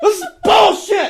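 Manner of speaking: very loud furious yell.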